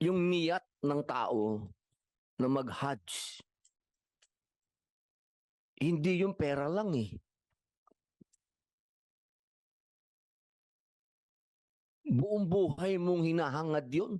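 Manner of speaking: tearful, near crying. Speaking about the wish to make the hajj, tearful, close to crying. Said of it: "Sorry kung na medyo naiyak ako".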